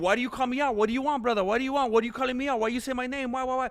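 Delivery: mock angry rant. Retelling what a fighter says to the one who called him out: imitating angry Armin Tsarukyan. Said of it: "He's all mad".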